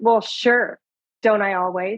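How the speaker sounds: sarcastic, passive-aggressive tone. Showing how a yes to a favor can sound: passive-aggressive sarcastic tone. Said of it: "My voice is not matching my words".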